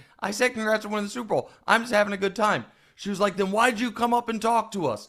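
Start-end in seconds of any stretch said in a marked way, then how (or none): 3.4-5.1 exaggerated, put-on South Jersey accent. Retelling a confrontation, quoting the woman's challenge, in a stupid South Jersey accent. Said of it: "in this stupid South Jersey accent".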